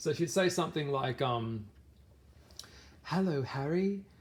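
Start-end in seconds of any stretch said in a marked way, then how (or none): 3.0-4.0 attempted, put-on British accent, pitched up. Describing a character's odd remarks, the speaker quotes her greeting Harry: Luna in British accent. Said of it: "I'm trying to do my British accent".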